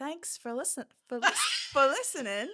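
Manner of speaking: stumbling, sing-song put-on British accent. Asked to try it, the speaker attempts a british accent. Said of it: "for listening in a British accent".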